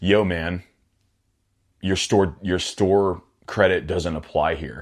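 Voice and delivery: put-on smart-aleck snarky tone, full of attitude. Retelling what the manager said on walking back in: imitating a snarky remark. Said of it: "with a snarky attitude".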